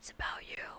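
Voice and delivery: very quiet, hushed stage whisper. Rereading a tweet's closing line, imitating a whisper. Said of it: "the whisper".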